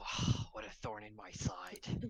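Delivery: sighing, weary panther voice. Voicing a panther hit by a thorny spoon: sighing panther voice. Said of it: "the panther just sighs and says".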